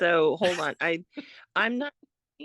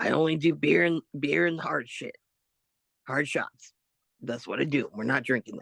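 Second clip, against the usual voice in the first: rasping voice; 4 semitones lower than usual. Retelling what a wrestler said about the drinks: imitating ODB's raspy voice. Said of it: "in her rasp-, raspy voice".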